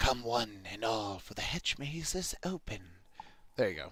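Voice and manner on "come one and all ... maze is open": slow, quiet, oddly hushed hiss. A narrator voices a man with an odd grin speaking to you: quiet hissing tone. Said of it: "He says to you in an oddly quite hissing tone".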